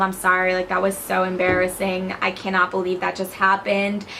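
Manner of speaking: ordinary delivery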